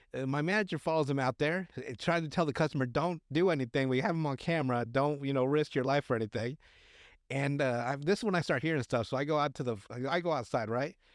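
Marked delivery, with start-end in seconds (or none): none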